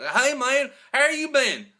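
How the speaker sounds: very high-pitched, loud, put-on Southern accent. Retelling running into a guy in North Carolina, imitating his Southern accent. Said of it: "he does sound like that".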